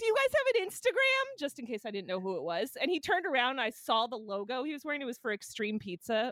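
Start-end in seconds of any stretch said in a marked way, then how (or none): 0.0-1.4 very high, loud shouted call-out. Retelling calling out to the guy walking away: retelling own yell. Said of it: "So I yelled out to the guy".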